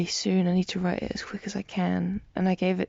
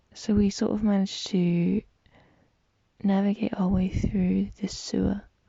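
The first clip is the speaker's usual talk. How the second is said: plain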